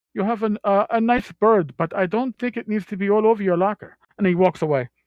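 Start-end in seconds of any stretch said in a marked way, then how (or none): 0.1-3.9 put-on Spanish accent, pitched up. Retelling what his captain from Spain told an officer, imitating Dolorosa's Spanish accent. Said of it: "they had the Spanish accent".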